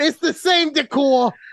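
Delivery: fake, put-on New York accent, pitched very high. Acting out telling a partner about the fancy McDonald's: put-on New York accent. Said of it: "what is this accent?".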